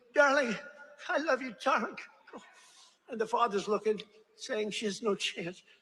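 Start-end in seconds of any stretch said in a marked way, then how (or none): 0.2-2.0 high-pitched screaming from off to the side. Telling about a mother urging her daughter on, imitating a mother screaming. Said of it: "the mother's screaming".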